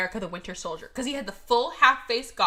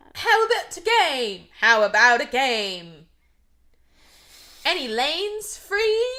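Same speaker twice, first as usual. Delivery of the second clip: loud fake American accent; 4 semitones higher, 5 dB louder than usual. Recapping a scene where a British man asks to join a game, fake American accent. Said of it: "he puts on his best American accent".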